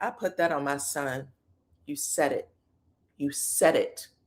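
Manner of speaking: put-on ice-cool, unbothered tone, low and quiet. Retelling how a woman answered someone going off at her, retelling a calm, cool reply. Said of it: "Destiny was as cool as a fucking cucumber".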